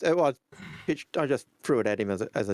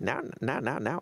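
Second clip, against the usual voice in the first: put-on creaky old-timer character voice. Speaker shows the line they always use when imitating old man Al Hurston. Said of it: "when I'm doing old man Al Hurston".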